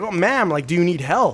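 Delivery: loudly calling out across a distance. Retelling a man calling out to a barefoot woman staring at him, retelling a man yelling out. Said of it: "And he yells at her".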